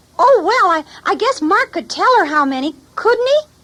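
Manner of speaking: very high, tiny puppet voice. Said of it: "this is my friend, Squeegee, the bookworm".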